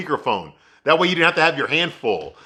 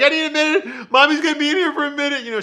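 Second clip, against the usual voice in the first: put-on crying voice, pitched much higher; 12 semitones higher than usual. Retelling how the mother answered her daughter from the cupboard, imitating Charlotte crying. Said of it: "She's crying".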